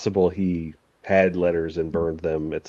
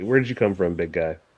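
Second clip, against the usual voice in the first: genuinely friendly, easygoing tone. Voicing a character who turns to another and asks: friendly, as a character. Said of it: "he's gonna be just friendly".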